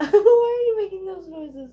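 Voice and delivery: high, loud squeal through laughter.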